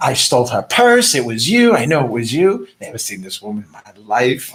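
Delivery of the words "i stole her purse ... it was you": ordinary delivery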